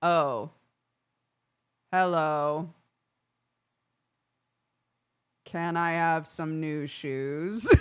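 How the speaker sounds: comically slow, stretched-out, drawn-out words. Describing their dad's slow speech, the speaker imitates him talking comically slowly. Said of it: "Looks like he talks so slow".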